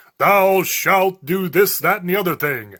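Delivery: grand, thundering, booming divine voice. Describing how people imagine the voice of God, a big booming voice. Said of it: "This big booming voice".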